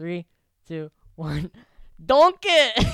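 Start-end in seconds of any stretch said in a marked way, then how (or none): 2.1-2.9 put-on ogre voice, higher and louder. On a count of three, co-host does a best Shrek impression: Shrek impression. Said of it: "you have to do your best Shrek impression".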